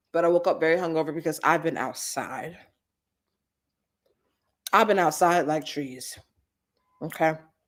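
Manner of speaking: talking while chewing, mouth full. Telling about a hungover morning, chewing while talking. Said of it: "I'm sorry for the chewing".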